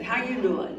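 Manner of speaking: put-on Texan accent. Speaker repeating how a woman asked her question, imitating a Texan accent. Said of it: "She did it with a Texan accent".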